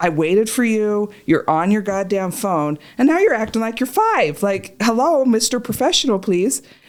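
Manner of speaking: mock fed-up, pissed-off, angry ranting. Retelling complaining that the other was on the phone: retelling own angry words. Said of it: "it pissed me".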